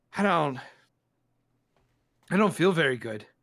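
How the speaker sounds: panicked and terrified. Voicing a character who just pulled out a bolt: panicked and terrified. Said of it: "one of kind of panic and terror".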